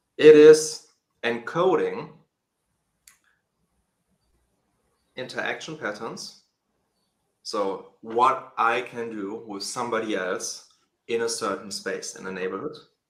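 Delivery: very slow, deliberate, drawn way out speech. Explaining what social DNA encodes, in very slow speech. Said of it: "you try and speak so slow".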